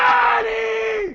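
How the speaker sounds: put-on kids' scream. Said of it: "all the kids start screaming".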